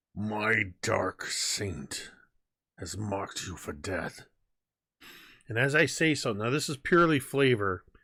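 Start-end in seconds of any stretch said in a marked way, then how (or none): 0.2-4.2 low, forced through clenched teeth. Facing the serpent in the game, the player speaks to it through gritted teeth. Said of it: "though I am speaking through gritted teeth".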